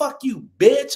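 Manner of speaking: high, angry voice, cussing out. Retelling how mom talks when cussing: imitating mom cussing out. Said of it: "she ain't gonna call you a bitch".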